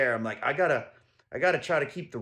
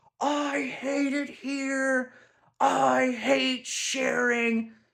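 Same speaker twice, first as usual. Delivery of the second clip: put-on very high, drawn-out little boy's scream; 11 semitones higher than usual. Retelling what a boy screamed from upstairs: imitating a boy screaming. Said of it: "We hear this little boy screaming".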